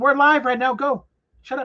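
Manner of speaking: shouting angrily. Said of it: "Then stop yelling".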